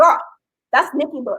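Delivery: ordinary talk, nothing marked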